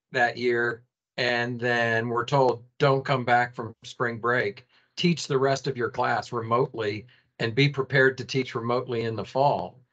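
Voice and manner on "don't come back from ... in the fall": ordinary talk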